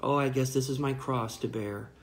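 ordinary delivery

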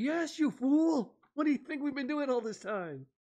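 very high, piercing, shrieking yell. Retelling a scene where Rita yells at someone: imitating Rita yelling. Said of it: "Rita just yells at me".

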